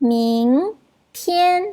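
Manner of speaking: ming in rising second tone, tian in level first tone. Mandarin tone lesson, second plus first tone: rising Ming, high level tian. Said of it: "nada dua campur nada satu bunyinya adalah Ming tian".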